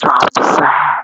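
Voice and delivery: hushed, slow, drawn-out whisper. Acting out calling to a passer-by from a car window: whispering. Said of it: "Just whisper it like that".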